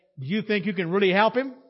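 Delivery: mock-sarcastic tone. Retelling a hospital visit where a doctor questioned Ken, giving a mock-sarcastic doctor's question. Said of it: "being sarcastic".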